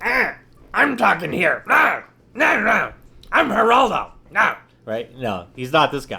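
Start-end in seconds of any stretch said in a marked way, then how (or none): 0.0-4.6 cartoon voice, very high, swooping, loud, slow. Imagining how a guy called Geraldo always talks, Yosemite Sam voice. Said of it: "It's like Yosemite Sam or something. And he's always like".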